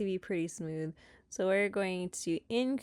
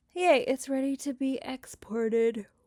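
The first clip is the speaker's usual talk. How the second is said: mid-yawn speech, words pulled by the yawn; 5 semitones higher, 5 dB louder than usual. Wrapping up an editing tutorial, yawning while speaking. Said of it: "I'm yawning".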